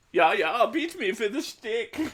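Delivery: put-on camp, effeminate German accent, very high pitch. Showing what his own stage accent is supposed to sound like, effeminate German accent. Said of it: "my effeminate German accent is is supposed to be like".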